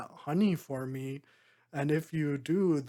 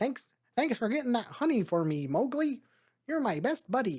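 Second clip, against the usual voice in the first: high-pitched flying-squirrel voice; 8 semitones higher than usual. Showing what a character voiced by Sam Raimi sounds like, speak to Mowgli in a Sam Raimi impression. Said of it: "That's kind of what Sam Raimi sounds like".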